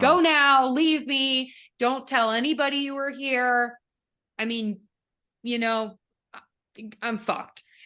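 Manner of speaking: put-on angry voice. Retelling the Phantom's reaction after releasing Raoul: acting out the Phantom angry. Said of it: "angry about it 'cause he's like".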